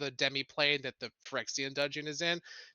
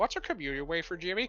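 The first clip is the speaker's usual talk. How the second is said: put-on kid voice, piping up; 2 semitones higher than usual. Voicing a kid asking another kid a question: child's voice. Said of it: "One of the kids says".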